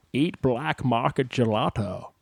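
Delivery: slow impression with words drawled out.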